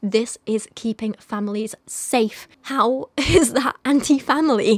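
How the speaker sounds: emotional, cracking voice with very slow delivery. Speaker defends donating to a domestic violence charity, emotional, voice breaking. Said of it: "My voice is going a bit now, I'm getting emotional".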